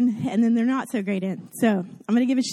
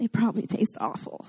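acted under-breath mutter, quieter; 6 dB quieter than usual. Speaker recounts a past moment, retelling an under-breath mutter. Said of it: "under my breath".

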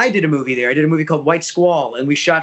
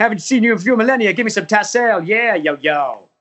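put-on manic comedian voice, higher pitch; 5 semitones higher than usual. Asked for an impression, doing the genie lines: Robin Williams impression. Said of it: "your Robin Williams impersonation".

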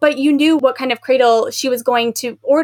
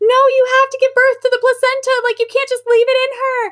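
put-on, very high screaming, pitched way up; 12 semitones higher than usual. Speaker recalls screaming at the book while reading, retelling screaming at a book. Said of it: "I was like screaming at the book".

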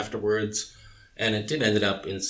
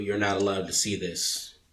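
ordinary delivery

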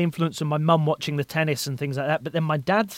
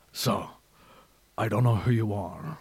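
deep, gravel-toned voice; 6 semitones lower, 4 dB quieter than usual. Showing another speaker how to do the impression: gravelly Liam Neeson voice. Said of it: "Liam's got the gravelly voice".

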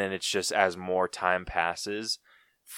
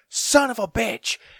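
acted, very high, slow, furious cursing yell; 6 dB louder than usual. Imagining the killer storming through the forest: Jason angrily yelling. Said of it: "just bitching them out".

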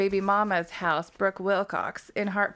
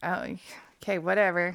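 ordinary talk

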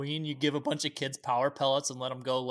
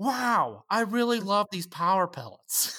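high, pitched-up character voice; 6 semitones higher than usual. Riffing on what Pac-Man sounds like, doing a Pac-Man voice. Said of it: "I was almost going like Owen Wilson".

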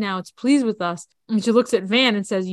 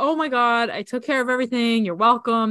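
mock delighted, pleased-with-himself cheerful gush; 2 semitones higher than usual. Recounting a reunion scene, acting out a man sounding all happy. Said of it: "and he's like all happy".

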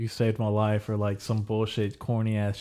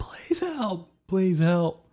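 mock tearful, very high-pitched crying tone; 9 semitones higher than usual. Retelling a kid trapped under a flipped four-wheeler, imitating a crying kid. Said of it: "he was crying".

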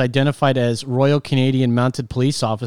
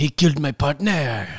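put-on cartoon French accent, cartoon Frenchman voice. Quoting a movie line after a prompt to do Pepe Le Pew. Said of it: "Just do Pepe Le Pew".

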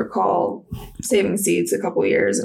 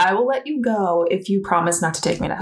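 usual speaking voice

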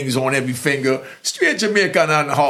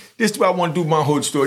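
talking a little fast, rattled off quickly. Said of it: "I know I'm talking a little bit fast".

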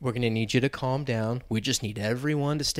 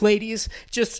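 put-on frightened, scared, high-pitched voice; 8 semitones higher than usual. Retelling a Taco Bell employee flinging the window open; imitating a scared employee. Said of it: "she's like scared as fuck".

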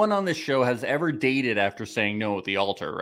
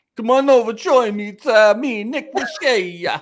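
very high, loud, projected put-on showman's voice; 11 semitones higher, 7 dB louder than usual. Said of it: "He's doing, uh, impressions".

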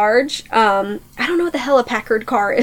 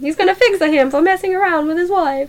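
exaggerated Italian accent, higher pitch; 5 semitones higher than usual. Retelling a story, voicing an Italian man, in a Luigi Mario accent. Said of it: "put a, like, Luigi Mario accent on him".

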